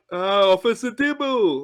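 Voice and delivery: cartoon cat character voice. Trying to remember and imitate Top Cat: Top Cat voice. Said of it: "I know it was something like".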